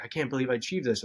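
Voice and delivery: ordinary talk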